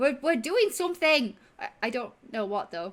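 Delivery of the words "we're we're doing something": high, loud, giddy, excited pleading tone.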